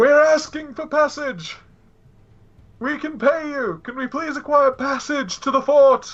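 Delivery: booming, drawn-out high shout. A player's character shouts across the river asking for passage: shouting. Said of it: "James was about to shout".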